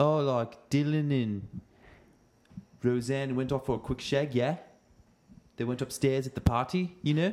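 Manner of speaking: relaxed British accent. Asked about south african slang, the speaker gives an example of its use: british accent. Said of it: "but that's a British accent".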